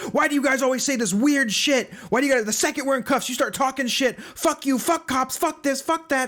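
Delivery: play-acted high, furious, angry rant, lashing out. Retelling a cuffed suspect's rant at cops: imitating an angry rant. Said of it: "You seem pissed".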